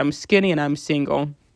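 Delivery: plain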